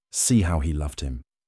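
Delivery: ordinary delivery, nothing marked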